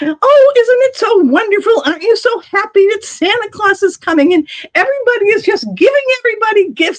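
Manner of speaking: very high-pitched, bubbly, cheery, gushing voice. Retelling how a shop lady tried to cheer up their little daughter, imitating a cheery shop lady. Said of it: "she's trying to cheer her up".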